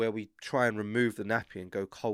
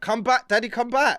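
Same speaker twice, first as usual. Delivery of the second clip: put-on child voice, very high, very loud, shrill, irate; 13 semitones higher, 9 dB louder than usual. Retelling how a son acts while doing a poo: imitating son getting irate. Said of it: "he'll get really, like, irate".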